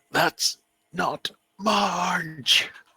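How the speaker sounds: forced through clenched teeth. Narrating a story, a longtime customer denies the raging woman is her; through gritted teeth. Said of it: "say through gritted teeth".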